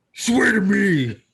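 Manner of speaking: put-on superhero growl.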